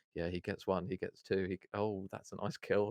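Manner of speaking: flat, dead-level monotone with no enthusiasm. Recalling first posting online, the speaker imitates their own monotone voice. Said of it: "my voice was so monotone".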